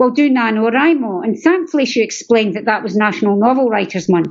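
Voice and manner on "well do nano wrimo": ordinary talk, nothing marked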